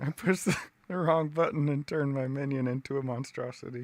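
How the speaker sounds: talking through hard laughter.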